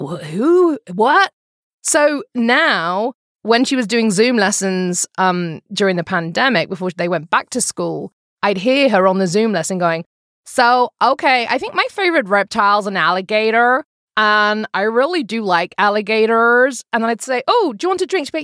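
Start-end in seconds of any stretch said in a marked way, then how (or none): 10.5-16.8 put-on American accent. Speaker quotes a girl speaking in her Zoom lesson, in an American accent. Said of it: "hearing you imitate our accent".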